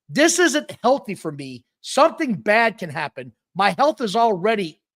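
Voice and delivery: ordinary delivery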